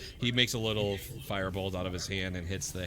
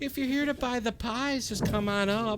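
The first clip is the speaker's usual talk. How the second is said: put-on very high, loud elderly woman's voice; 5 dB louder than usual. Narrating a scene, the speaker voices an old lady calling from above; old lady voice. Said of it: "you hear an old lady's voice come from above".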